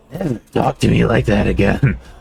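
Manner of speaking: gritty, seething, rough, angry voice. Recounting a game scene, voicing a character's reply; acting out an angry line. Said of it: "fucking angry".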